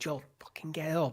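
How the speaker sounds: put-on desperate, urgent scream. Retelling a character's plea to a fallen companion: imitating a desperate scream.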